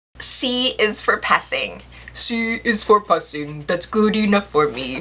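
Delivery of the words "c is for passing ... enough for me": put-on puppet monster character voice. Talking about graduating late because of one class, Cookie Monster impression. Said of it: "I don't have the best Cookie Monster impression".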